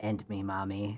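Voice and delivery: quiet whisper under the breath. Playing a captive with a spear at his throat: whispering under his breath. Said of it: "he whispers under his breath".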